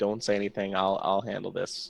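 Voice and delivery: soft, hushed half-whisper aside. Playing a character telling a companion to stay quiet: half-whispering. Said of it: "I'm gonna whisper in her ears".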